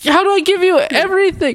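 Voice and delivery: very high, shrill, squeaky voice.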